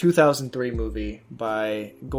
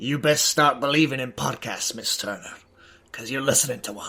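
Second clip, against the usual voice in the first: faked Scottish brogue, played for a laugh; 2 semitones higher than usual. Opening the weekly podcast episode with a movie quote, in a Scottish accent. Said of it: "Why do you sound Scottish?".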